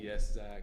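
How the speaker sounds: mock disappointed tone. Retelling a teacher answering a student's joke: imitating a disappointed reply. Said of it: "but then she was just disappointed".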